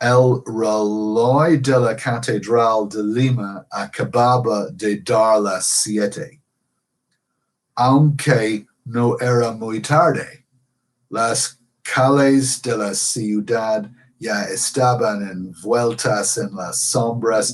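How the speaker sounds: exaggerated English accent on Spanish, "reloj" drawn out. Reading Spanish aloud with English pronunciation, in an exaggerated English accent. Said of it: "using English pronunciation? ... that sets me off as a gringo. Um, and I'm exaggerating a bit".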